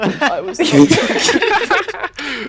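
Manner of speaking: NOT stressed slow and loud, laughing.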